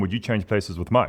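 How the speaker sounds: ordinary talk, nothing marked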